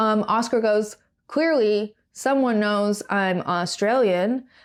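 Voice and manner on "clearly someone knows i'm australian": usual speaking voice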